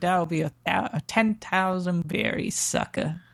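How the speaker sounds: put-on New York accent, slow. Quoting a character's line to the others: new york accent. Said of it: "he has like a New York accent".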